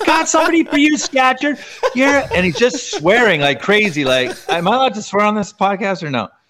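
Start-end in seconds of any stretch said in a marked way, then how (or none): 0.0-1.6 squeaky yell, very high-pitched. Retelling a guy screaming from the other bench at a game, imitating a high-pitched yell. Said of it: "he's got this really high pitched voice".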